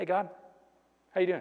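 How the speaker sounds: very hushed, soft, breezy, offhand casual tone. Acting out a person greeting God casually at a party. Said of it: "Can't snap".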